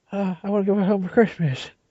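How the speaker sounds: soft, mumbly voice with mouth full. Imitating an actor in a film, talking like his mouth is full: imitating Chris O'Donnell's mumbly talk. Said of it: "talks like he has shit in his mouth".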